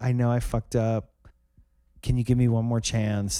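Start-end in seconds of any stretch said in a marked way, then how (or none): none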